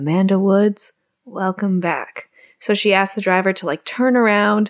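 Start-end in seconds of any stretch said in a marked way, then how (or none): 0.0-2.3 big-screen movie promo announcer voice. Retelling a film scene, a voice in the heroine's head welcomes her back, Mr. Moviefone voice. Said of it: "the Mr. Movie Phone voice in her head saying".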